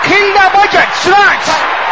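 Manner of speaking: fiery, forceful shouted delivery.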